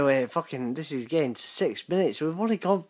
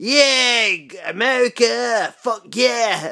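very slow, high, put-on American accent, drawn-out "yeah"; 7 semitones higher, 9 dB louder than usual. Acting out an American in an imagined zombie show: mock American voice. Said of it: "An American".

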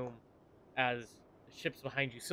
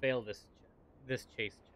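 usual speaking voice

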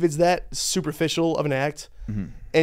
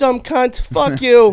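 put-on gruff comedian voice, higher and louder; 9 semitones higher, 10 dB louder than usual. Imitating Bill Burr while arguing about his looks: Bill Burr voice. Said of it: "Have you heard his voice?".

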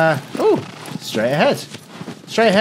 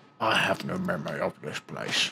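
low, dropped-pitch delivery; 10 semitones lower, 12 dB quieter than usual. Quoting a Gandalf meme about not remembering a place. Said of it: "I'm like that Gandalf meme".

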